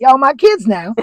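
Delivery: put-on Texas accent, very high and very loud. Retelling what a guy says to the kids, imitating Mike. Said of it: "I do a really good Mike".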